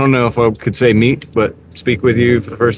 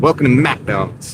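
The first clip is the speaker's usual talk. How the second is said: speaking with a little attitude. Showing how you gotta say the greeting: with a little attitude. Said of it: "You gotta say it with a little attitude".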